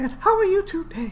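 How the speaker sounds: voice pitched way up, cartoon-style. Showing how to get into character: Mickey Mouse voice. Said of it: "just gotta get his voice right".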